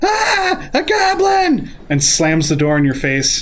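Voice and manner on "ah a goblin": shrill, high-pitched, terrified shriek. Voicing a woman who opens the door and sees a goblin: screaming woman. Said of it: "she opens the door and she screams".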